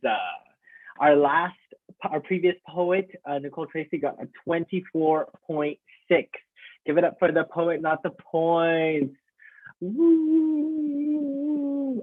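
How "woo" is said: very high voice crack on drawn-out "woo". Host asking the crowd to cheer the previous poet, deliberately cracking voice. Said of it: "I'm making my voice crack on purpose".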